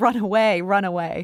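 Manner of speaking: ordinary talk, nothing marked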